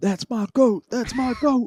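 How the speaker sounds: ecstatic scream, very high and very loud. Speaker retells what he was screaming when fired up: retelling own screaming. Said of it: "I was screaming".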